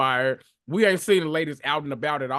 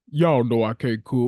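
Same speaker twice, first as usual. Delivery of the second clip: put-on very deep voice, louder; 3 semitones lower, 4 dB louder than usual. Retelling Tammy's reply to a cookout invite: Tammy's real deep voice. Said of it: "that real deep voice she got".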